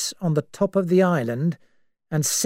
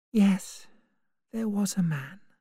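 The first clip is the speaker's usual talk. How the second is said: tired, weary, much quieter; 7 dB quieter than usual. Narrator reads Vera answering Lombard's question, tired voice. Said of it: "Vera agreed in a tired voice".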